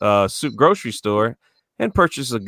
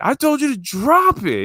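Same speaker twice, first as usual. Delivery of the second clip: very high screaming, drawn out and slow. Retelling a robbery, imitating a masked robber screaming an order: imitating a robber screaming. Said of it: "he screams at me like".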